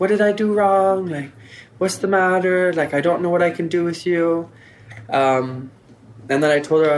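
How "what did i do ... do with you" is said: crying, bewildered, tearful, pleading tone. Retelling her mom's reaction after the family saw her arm, imitating mom crying. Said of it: "my mom was like crying".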